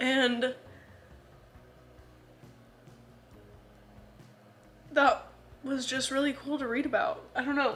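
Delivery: talking while crying, tearful voice. Talking about a book scene that moved them: crying while talking. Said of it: "I know I'm crying".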